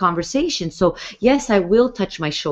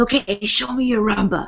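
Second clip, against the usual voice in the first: put-on raunchy voice, higher and slower; 3 semitones higher than usual. Retelling what a man in his sixties said before their rumba, imitating a raunchy voice. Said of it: "really raunchy voice".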